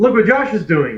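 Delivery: manic, quick, high, loud scream. [name] screams out during a scene with a guard: [name] screaming. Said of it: "[name] screams out".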